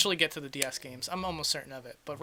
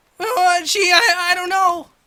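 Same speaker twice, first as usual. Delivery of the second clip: put-on nervous cartoon teen voice, higher and louder; 14 semitones higher, 14 dB louder than usual. Doing an impression the fans asked for: Morty voice. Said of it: "Morty is good".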